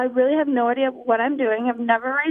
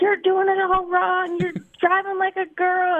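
mock high-pitched hollering and yelling; 6 semitones higher than usual. Retelling how dad yelled in their face after coming off the track, retelling dad's yell. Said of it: "he's yelling at me".

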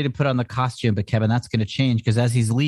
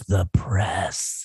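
put-on clenched-teeth voice, much lower pitch; 4 semitones lower, 3 dB quieter than usual. Retelling a scene where Nuke answers Kingpin, imitating Nuke through gritted teeth. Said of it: "Nuke like grits his teeth and goes".

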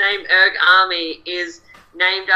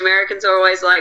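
normal talking voice

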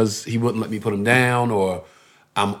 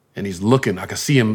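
normal talking voice

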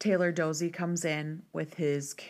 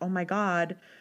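mock sudden, alarmed, panicked exclamation; 2 semitones higher, 3 dB louder than usual. Retelling a scene where Lorelai hears a voicemail: imitating Lorelai panicking. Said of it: "she starts panicking and she's like".

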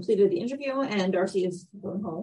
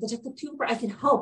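put-on excited voice, higher pitch; 3 semitones higher than usual. Recapping a scene where Lauren offers help to a detective, imitating Lauren's excited tone. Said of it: "And she's like excited".

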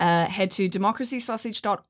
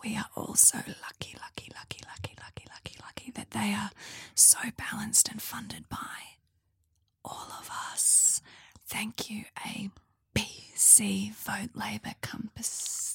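smiling ASMR whisper, quieter; 9 dB quieter than usual. Reading out a tweet as an ASMR bit: ASMR whisper with a smile. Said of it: "I'm gonna do this A S M R whisper smile".

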